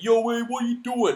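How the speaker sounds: very high-pitched, loud Brooklyn accent. Describing how they expect a game character to sound: kind of Brooklyn accent. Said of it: "kind of Brooklyn".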